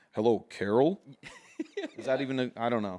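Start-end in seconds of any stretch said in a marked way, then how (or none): 0.2-1.0 put-on cop voice with added bass. Showing how a seventeen-year-old puts on a cop voice, with bass added. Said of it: "just put that bass in your voice".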